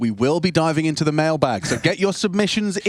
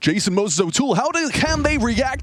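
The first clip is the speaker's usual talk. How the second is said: put-on American broadcaster accent, higher pitched; 10 semitones higher than usual. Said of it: "I'm gonna try and go Corey Dunn".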